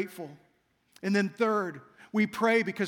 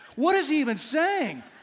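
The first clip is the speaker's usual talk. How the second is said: plain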